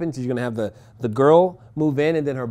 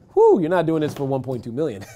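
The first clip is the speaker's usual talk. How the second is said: swooping speech broken up by laughter. Working through rehab cost math aloud, laughing while talking. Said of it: "I'm laughing because".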